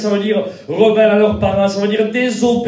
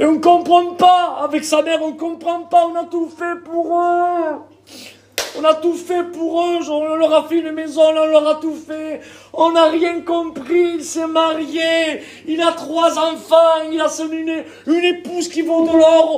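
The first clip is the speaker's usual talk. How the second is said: put-on tearful, crying voice, higher; 8 semitones higher than usual. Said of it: "En pleurant, les parents".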